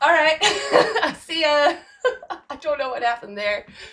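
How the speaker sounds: loud, high laughter throughout the words.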